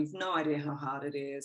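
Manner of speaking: mock defensive, protesting, pushing-back tone. Retelling an answer to someone who said to master it: imitating own defensive reply. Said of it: "I was real defensive, going".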